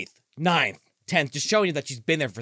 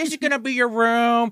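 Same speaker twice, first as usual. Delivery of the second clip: high, loud, sleazy pimp voice. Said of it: "He's like".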